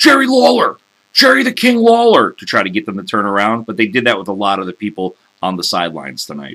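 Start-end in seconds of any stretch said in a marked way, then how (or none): 0.0-2.3 high, loud heckling yell. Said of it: "just kept yelling".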